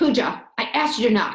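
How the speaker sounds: loud, heated, angry fighting voice. A webinar host demonstrates to the audience a fighting voice. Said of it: "a fighting voice".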